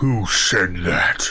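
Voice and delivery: hulking, deep giant voice. A game master voices a frost giant rising from a crater, frost giant voice. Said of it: "And in giant, you hear".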